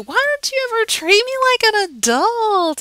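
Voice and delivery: put-on very high, loud, swooping childlike whine. Explaining voice pitch, a speaker demonstrates asking someone a question while whining. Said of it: "and you're whining".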